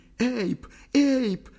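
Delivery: very high, forlorn, squeaking call. Narrator voicing an abandoned character calling out after a man, squeaking. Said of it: "пищала покинутая Ли".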